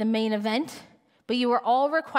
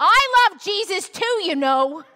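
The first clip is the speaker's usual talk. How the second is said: mock yell, higher, louder, slower; 7 semitones higher, 7 dB louder than usual. Speaker retells Grace shouting up to him in the baptism tank: imitating Grace yelling. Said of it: "Then she amps it by yelling".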